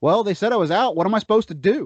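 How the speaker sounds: acted, high, frustrated, nearly angry reply. Retelling how Fred answered Army's question: imitating Fred's angry reply. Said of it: "Fred almost angrily answers him and says".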